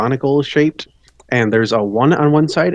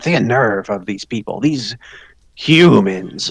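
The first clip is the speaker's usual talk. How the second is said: offended, indignant gnome voice grumbling in a huff; 3 semitones lower than usual. A storyteller voices a character stalking off after returning gold, in a huffy grumble. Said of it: "goes about his business in the huff".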